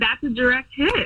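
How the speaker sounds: put-on sporty announcer call, yelled. Retelling what a partner yelled during intimacy: imitating Jeff yelling. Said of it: "he yelled".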